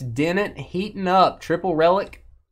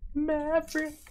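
very high-pitched, odd character voice; 10 semitones higher, 9 dB quieter than usual. Opening a card, then calling out like Goose: Goose voice. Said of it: "when did Goose ever sound like that?".

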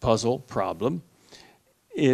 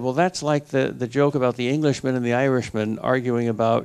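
plain

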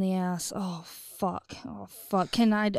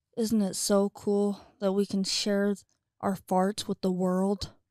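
ordinary talk, nothing marked

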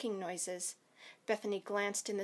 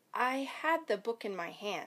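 plain

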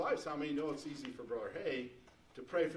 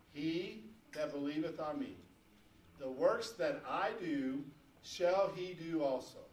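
slow, deliberate read-aloud. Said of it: "I'm gonna read this real slow".

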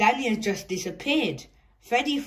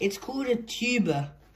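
ordinary delivery

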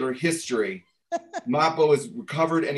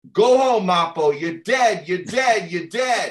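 play-acted slow, high, stretched-out yell; 5 semitones higher, 4 dB louder than usual. Retelling how a father stood up at an assembly: imitating someone yelling. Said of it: "he stands up and he yells".

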